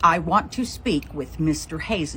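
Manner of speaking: plain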